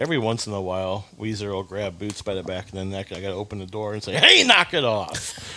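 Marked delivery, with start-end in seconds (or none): 4.1-5.6 very slow, drawn-out, scolding fatherly voice. Retelling telling the pets to stop: good dad voice. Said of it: "That was a really good dad voice".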